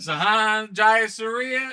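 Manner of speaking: mock announcer call, high and very slow.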